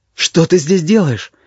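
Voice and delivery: frightened startled voice. Narrator reads Jean's question when he sees her below him, asking fearfully. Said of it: "испуганно спросил он".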